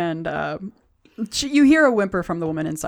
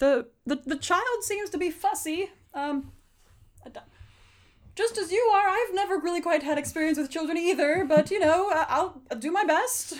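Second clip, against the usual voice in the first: loud shouting, much higher pitch; 12 semitones higher, 4 dB quieter than usual. A character hears the others below talking and shouts down to them. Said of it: "Olos kind of shouts down".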